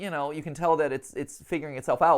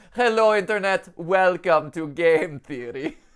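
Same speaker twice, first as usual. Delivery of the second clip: imitated European accent; 3 dB louder than usual. Repeating a video's opening line: imitating a European accent. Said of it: "I like my European accent".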